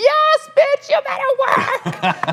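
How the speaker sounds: very high, very slow, drawn-out shrieking, screaming cheer. Retelling cheering from the corner as she walks a runway: imitating screaming cheers. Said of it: "literally screaming".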